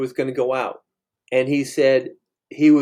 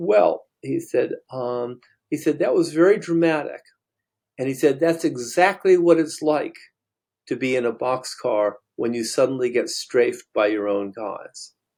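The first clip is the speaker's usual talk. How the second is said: ordinary delivery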